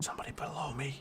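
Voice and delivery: soft, very quiet, hushed whisper under the breath. Noticing somebody below so they won't hear: whispering. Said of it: "I'm not sure why I'm whispering".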